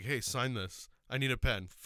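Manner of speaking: put-on self-assured, very slow, confident movie-star voice. Retelling a movie scene, imitating a confident movie line. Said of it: "wish I had the confidence that he does".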